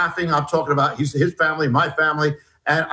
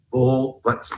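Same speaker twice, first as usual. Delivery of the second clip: put-on whisper, lower pitch; 3 semitones lower than usual. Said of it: "He whispers and he says".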